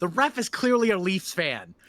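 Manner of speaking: high, very loud yell at top of lungs. Retelling a bad game of penalties: imitating a full-volume yell. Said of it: "he yelled at the top of his lungs".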